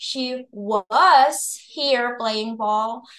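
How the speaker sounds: emphasis on the word "was". Explaining in Indonesian where an English sentence's emphasis falls: stress on was. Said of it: "penekalannya di was".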